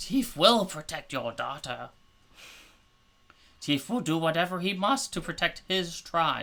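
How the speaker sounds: high-pitched, loud character voice. Voicing Teef as he salutes and vows to protect the daughter: Teef character voice. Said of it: "And he kind of salutes with his spear, and he goes".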